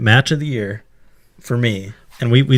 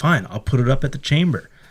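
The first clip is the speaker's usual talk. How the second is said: normal talking voice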